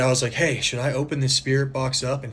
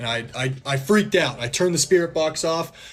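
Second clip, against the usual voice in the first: usual speaking voice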